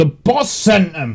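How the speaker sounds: shouting. The game master voices an enemy at the end of its turn, shouting. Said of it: "He just shouts".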